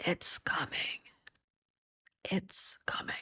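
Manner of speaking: ghostly, breathy, very quiet eerie whisper. A head with rolled-back eyes turns to look at you and whispers. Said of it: "as it kind of whispers".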